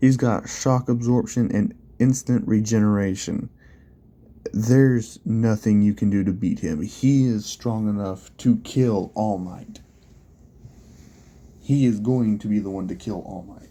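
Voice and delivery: plain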